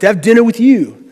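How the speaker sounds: put-on heavy, thick, laid-on New York accent. Retelling a dinner across the table, quoting Jack's reply in Jack's thick New York accent. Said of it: "He's got this thick New York accent".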